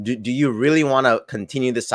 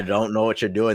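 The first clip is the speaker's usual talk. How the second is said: normal talking voice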